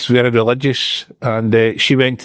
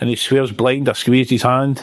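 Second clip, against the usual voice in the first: normal talking voice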